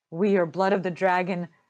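plain

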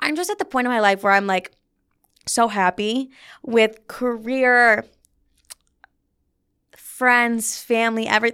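voice welling up with tears, on the verge of crying. Talking about being happy with career, friends and family: getting teary-eyed. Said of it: "I'm literally getting teary-eyed".

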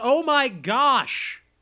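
play-acted, full-on alarmed yell, pitched high. Repeating a character's line to say it was yelled: imitating Arnold yelling. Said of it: "He yells".

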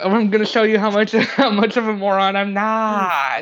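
slow delivery with long, drawn-out "not". Repeating another player's line to show it: Tommy Wiseau voice. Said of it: "That sounded like Tommy Wiseau voice".

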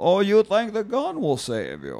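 high, swooping vampire voice. Taunting someone who thinks a gun will save them, in a Dracula voice. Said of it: "Now I sound like".

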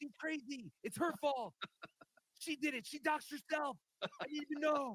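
very quiet put-on voice. Asked to do Chad again, imitating Chad: Chad impression. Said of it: "do some Chad again".

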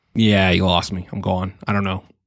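ordinary delivery

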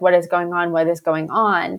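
put-on, freaked-out, panicked delivery. Retelling two girls in a car whom nobody would tell anything, acting out freaking out. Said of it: "like freaking out".

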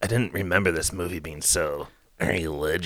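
pure disgust in the voice, turned-off. Retelling what another speaker said in the car: imitating a disgusted tone. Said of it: "pure disgust in your voice".

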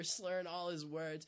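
ordinary talk

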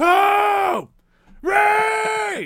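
very loud, very high yell, one word stretched out. Mocking a character's banter by yelling names: imitating Finn yelling names. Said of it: "the banter is Finn going".

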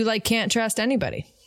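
ordinary talk

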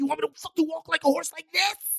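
play-acted very high, angry, mad screaming. Retelling a fight while walking with a jealous girlfriend: imitating someone screaming. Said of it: "I screamed at her".

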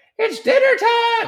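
terrible put-on voice, very high-pitched. Recounting hearing a wife say it's dinner time, terrible impression of wife. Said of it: "that's a terrible impression of my wife".

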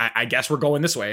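ordinary delivery

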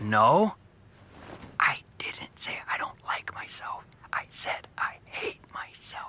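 quiet, hushed, breathy whisper. Correcting a doctor about what was said: quietly correcting. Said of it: "quietly correcting me".

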